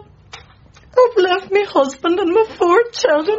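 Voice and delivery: very high, slow, weeping through the words. Answering another speaker's question about an excuse, crying while talking. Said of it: "now you just stop crying now".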